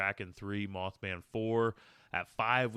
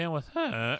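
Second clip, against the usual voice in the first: mocking put-on voice, higher, voice cracking; 7 semitones higher, 3 dB louder than usual. Doing an impression of the other speaker's sign-off: imitating co-host, voice cracking. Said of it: "my impression of you saying it".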